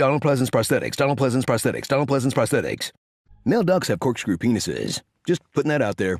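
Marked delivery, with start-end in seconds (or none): 0.0-2.9 fast, rattled-off, rapid-fire repetitive delivery. Speaker discussing a movie, repeating a phrase three times, tongue twister said fast. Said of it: "say that three times fast".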